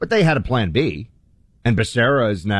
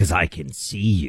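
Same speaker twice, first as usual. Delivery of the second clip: very slow, low, creepy horror-movie voice; 5 semitones lower, 4 dB quieter than usual. Acting out the phone caller in Scream: scary voice. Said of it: "with the scary voice".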